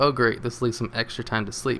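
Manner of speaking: ordinary talk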